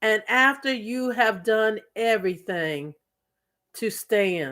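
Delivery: measured, slow, deliberate reading voice. A speaker reading Bible verses aloud to listeners, reading slowly. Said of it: "And I'm going to read these slowly".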